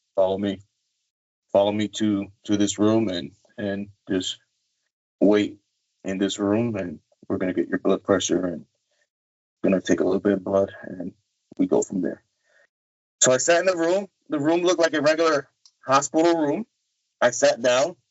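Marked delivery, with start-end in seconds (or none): 0.2-12.3 low, deep voice. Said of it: "he had a low voice".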